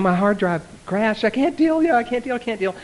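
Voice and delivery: very high, panicked, frantic freak-out. Retelling a man's phone call: imitating Andrew freaking out. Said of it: "but he's freaking out".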